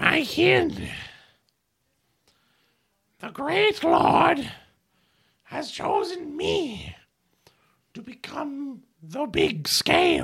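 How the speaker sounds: loud, high-pitched creature voice. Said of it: "he sits there and goes".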